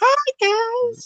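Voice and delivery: very high-pitched, squeaky voice. As the oldest, joking that the other guys have deeper voices, greet them in an Elmo voice. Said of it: "Sound like Elmo and shit".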